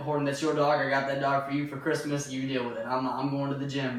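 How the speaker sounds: normal talking voice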